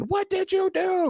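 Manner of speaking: mock, shrill, very high-pitched shriek. Retelling the last scene of a show, where she screams: imitating a character screaming. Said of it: "she's screaming".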